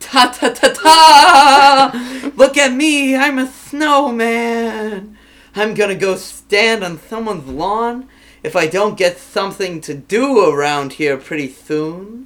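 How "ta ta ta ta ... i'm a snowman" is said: put-on very slow, drawn-out, pitched-up childish voice. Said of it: "I'll act like a kid".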